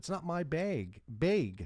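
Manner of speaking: long-A bag, drawn out. Quoting the stepdaughter's reply, in her long-a dialect accent. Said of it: "Everything is a long A in that dialect".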